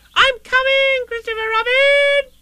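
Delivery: very high, little squeaky call. Narrator reading a story character answering Christopher Robin, squeaking out. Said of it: "he squeaked out".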